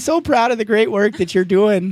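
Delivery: proud, gushing, high-pitched tone. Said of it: "that's the aunt accent".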